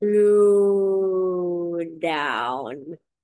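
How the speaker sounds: each word stretched out very slowly. Reminding radio listeners of the show's name, asked to say it slowly. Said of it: "Can you say slow down? Slowly".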